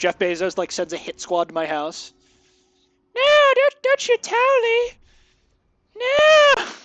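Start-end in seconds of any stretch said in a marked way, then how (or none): 3.2-6.6 very high, slow, drawn-out stoned cartoon voice. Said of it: "I just always think of just a Cowley voice".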